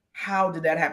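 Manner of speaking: ordinary talk, nothing marked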